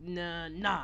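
ordinary talk

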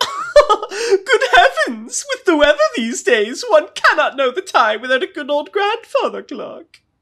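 very high, loud sing-song voice. Playing the queen greeting the arriving strike team: Queen Elizabeth II voice. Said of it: "with Queen Elizabeth the second sitting".

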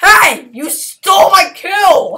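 full-on high, loud screaming. Playing a game while being deliberately annoying, screaming. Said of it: "it's also kind of awkward that I'm screaming".

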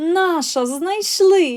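very high gleeful cry. Reading a story, the gopher answers the hedgehog Forko: joyful exclamation. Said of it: "радісно вигукнув ховрашок".

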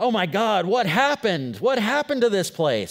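high, loud, blurted cursing in dismay.

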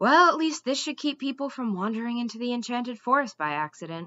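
plain

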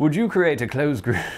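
high, loud, attempted put-on English accent. Reading out a submitted question in a mock english accent. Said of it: "Let's use my highly accurate English accent here".

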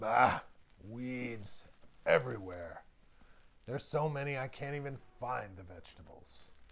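put-on growling, complaining old wolf voice. A hungry old wolf weeding his garden complains, in a growling old wolf voice. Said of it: "The old wolf growled".

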